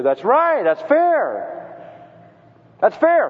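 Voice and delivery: indignant, approving exclamation.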